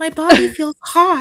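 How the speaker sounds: acted submissive character voice. Acting out a bit with a partner, speaking in an uke voice. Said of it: "those few seconds of Uke voice".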